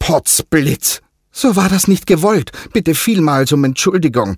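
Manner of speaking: very high-pitched, nervous, stammering, apologetic tone. Adamu apologizes to the water spirits, a nervous stammer. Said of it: "stammelte Adamu zusehends nervös".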